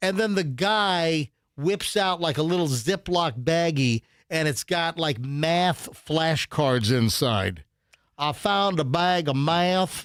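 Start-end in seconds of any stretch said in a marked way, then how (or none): 8.2-10.0 imitated heavy Southern accent. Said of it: "a guy goes with a heavy Southern accent".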